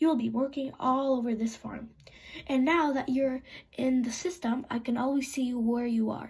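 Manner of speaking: ordinary delivery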